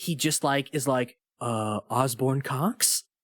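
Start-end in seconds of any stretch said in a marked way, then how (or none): 1.4-3.0 hesitant, groping delivery, as if mind went blank. Retelling how a movie character talks when he doesn't know what to say: imitating Chad at a loss for words. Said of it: "anytime he doesn't know what to say".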